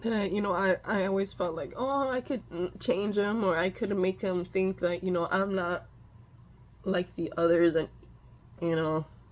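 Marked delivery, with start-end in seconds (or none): none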